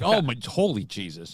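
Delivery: mock spooked, very slow, drawn-out, freaked-out outcry. Imitating a man at the door who gets freaked out: imitating a freaked-out man. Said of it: "he'd get freaked out".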